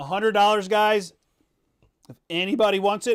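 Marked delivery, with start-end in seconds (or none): 2.1-3.2 breaking voice, cracking partway through. Host offering a shirt for a hundred dollars, voice cracking. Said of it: "my voice just cracked".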